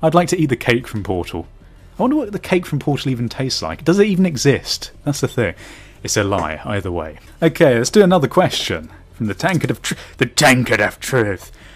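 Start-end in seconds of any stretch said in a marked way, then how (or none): 10.2-11.5 slow, dopey, goofy, stupid put-on voice. A channel host introduces a viewer question segment, in a stupid voice. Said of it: "I have to say it in a stupid voice every time".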